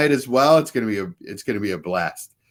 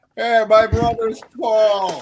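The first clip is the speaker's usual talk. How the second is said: pitched-up, dopey, dim sitcom-style voice; 9 semitones higher than usual. Joking with the others about the sitcom, doing a Ray impression. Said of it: "I can do a good Ray".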